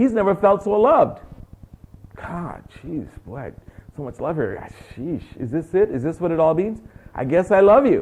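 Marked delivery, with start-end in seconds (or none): 2.2-8.0 flustered, overwhelmed, stumbling, swept-away babble. Acting out a man who has never felt so loved: imitating an overwhelmed man. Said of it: "He's overwhelmed".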